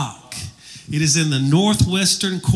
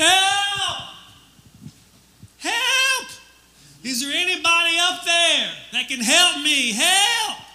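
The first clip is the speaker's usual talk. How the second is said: mock very high, stretched-out, drawn-out yelling cries. Telling a joke about a jogger hanging from a branch: imitating someone yelling for help. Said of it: "He starts yelling".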